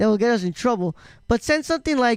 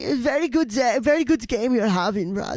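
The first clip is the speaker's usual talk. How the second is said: put-on German accent. Retelling what others said to a player during a game, in a german accent. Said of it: "Never do the German accent again".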